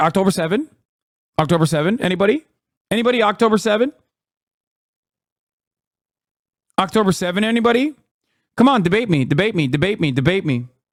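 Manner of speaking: derisive, needling, taunting voice, pleading and repeated. Mocking someone who ran out of talking points: imitating someone mockingly. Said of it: "It was like".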